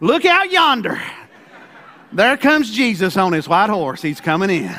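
down-home country Kentucky accent. Speaking about Jesus coming, saying it in a Kentucky country accent. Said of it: "I'm going to say it like a good Kentucky boy".

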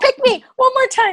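eager, very high-pitched pleading. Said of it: "and then Rob's like".

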